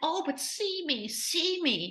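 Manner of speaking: acted, slow, needy, pleading shout. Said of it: "But he is still like".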